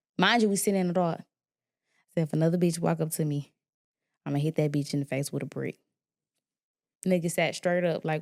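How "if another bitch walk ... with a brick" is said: calmest, lowest possible dead-calm voice. Retelling own warning while sitting in the dark: calmest, lowest voice. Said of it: "in the calmest, lowest voice".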